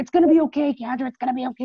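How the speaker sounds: curt, snappish tone. Retelling how coworkers snap back at her concern: imitating someone snapping. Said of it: "constantly snapping at me".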